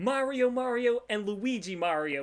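put-on New York accent. Recalling a toy commercial, imitating the kid playing with the toys in a full New York accent. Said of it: "with the full, like, New York accent".

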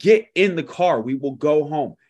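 acted-out yelling. Telling a story, the speaker acts out a mother answering her son, retelling a mom yelling. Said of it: "And she's yelling at him".

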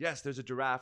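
ordinary delivery

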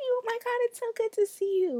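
high, loud, excited shout. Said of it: "I was shouting across the room".

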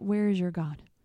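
ordinary talk, nothing marked

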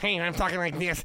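derisive, mocking animated-kid voice. Mocking the kid from Polar Express while ranting about the movie: imitating the Polar Express kid. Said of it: "The kid that's".

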